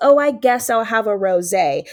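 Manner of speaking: ordinary talk, nothing marked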